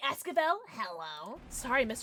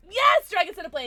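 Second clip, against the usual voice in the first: high, loud, sudden scream; 8 semitones higher, 5 dB louder than usual. Streamer reacting out loud during a game stream, screaming. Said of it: "I didn't mean to scream that at you".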